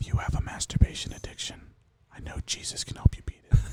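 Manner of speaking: soft, breathy whisper, barely voiced. Told to whisper the joke and keep a straight face: whispering. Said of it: "Now whisper it and keep a straight face".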